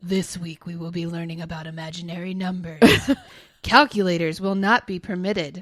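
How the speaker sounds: loud, put-on demon voice. Reading out a commenter's imagined script, the demon speaks in a demon voice. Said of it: "Demon voice".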